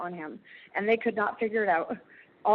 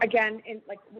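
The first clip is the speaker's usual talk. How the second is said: plain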